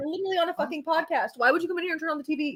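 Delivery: high-pitched angry scolding. Scolding someone who turned on the TV during a live podcast: yelling at someone. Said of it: "You don't yell at Lane".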